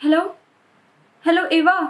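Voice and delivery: sounding worried and anxious. [name] calling Eva after her bank account got compromised, worried. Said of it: "Why you sound so worried?".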